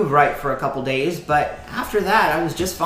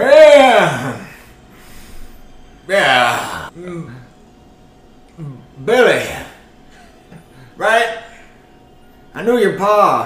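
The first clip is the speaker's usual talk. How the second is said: put-on loud, sloppy, drawn-out drunken man's slur; 6 dB louder than usual. A very drunk man gets up from a lounging chair to greet billy, very drunk. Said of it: "Very drunk".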